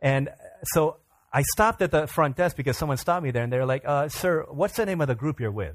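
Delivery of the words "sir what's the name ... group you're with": ordinary talk, nothing marked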